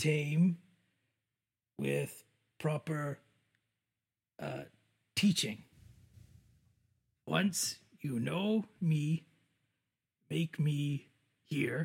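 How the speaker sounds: pidgin-style broken-grammar character speech. A player's adventurer speaking a riddle to companions, in broken-speech adventurer voice.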